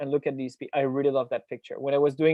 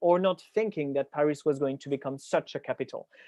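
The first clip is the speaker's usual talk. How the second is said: ordinary delivery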